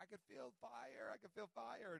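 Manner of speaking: mock, high, rough, ragged, raspy outcry. Retelling a faith healing, the speaker voices the man from the wheelchair: retelling a healed man's screaming. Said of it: "he starts screaming like".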